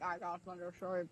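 very low, deep, soft voice in deepest register. Trying out different ways to say a phrase, very low tone. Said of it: "the most like low tone".

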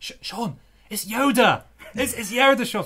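voiced stage whisper. Retelling how a friend woke them during a film: imitating a friend half-whispering. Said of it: "I remember your voice whispered".

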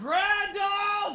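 very high, loud shouting. Game master voicing a woman who shouts a name at the party. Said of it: "you hear her shout".

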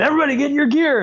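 mock shrill, very high scream. Retelling how the ROV driver shouted to everyone: imitating someone screaming. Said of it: "started screaming".

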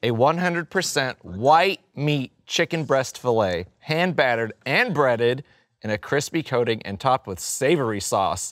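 slow, deliberate reading voice. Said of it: "You want me to read it slow?".

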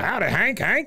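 "hello" pitched way up, very high voice. Retelling a scene, doing Buck Strickland's voice as he enters. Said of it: "doing his voice".

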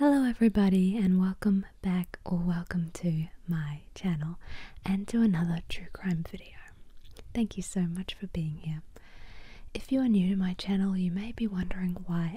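gentle, soft-spoken ASMR-style voice. Welcoming viewers to a true crime video on an ASMR channel: soft-spoken. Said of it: "I am speaking in a soft-spoken voice".

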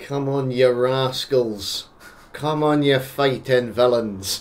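put-on angry Scottish accent. Talking about a spot covered by French guns, then urging on the rascals: angry Scottish accent. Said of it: "just like an angry Scottish man".

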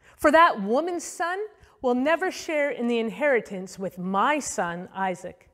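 plain

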